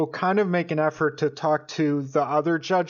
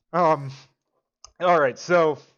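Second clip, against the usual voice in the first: ordinary talk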